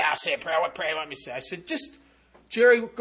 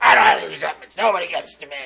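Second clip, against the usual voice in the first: put-on deep, gravelly navy chief voice, lower; 2 semitones lower, 7 dB louder than usual. Retelling what Jerry answered when asked to list his resentments, Jerry's deep gravelly voice. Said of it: "Deep, gravelly voice".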